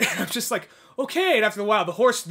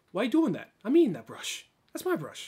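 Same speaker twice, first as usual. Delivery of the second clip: animated, swooping nineties movie hero delivery; 4 dB quieter than usual. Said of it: "I don't know why it's talking like [name]".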